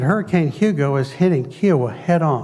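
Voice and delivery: normal talking voice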